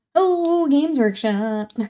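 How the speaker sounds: lilting, swooping, singsong delivery. Reacting to rule changes for a favorite army: sing-songy voice. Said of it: "saying Games Workshop in a sing-songy voice".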